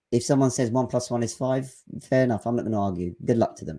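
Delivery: plain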